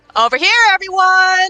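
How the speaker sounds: high, loud yell at full shout. Voicing a character calling everyone over: yelling in character. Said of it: "Lynx yells".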